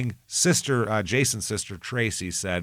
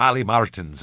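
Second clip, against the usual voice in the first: put-on Irish accent; 3 dB louder than usual. Showing how the speaker's name sounds with an irish accent. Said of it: "if you say my name with an Irish".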